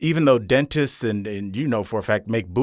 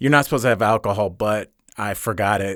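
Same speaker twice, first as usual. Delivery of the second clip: normal talking voice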